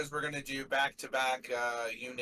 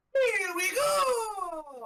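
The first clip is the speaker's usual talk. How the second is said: put-on Italian-accented cartoon voice, higher and louder; 6 dB louder than usual. Doing a Mario impression for another speaker who rates it: Mario impression. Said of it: "Ruined my best Mario impression".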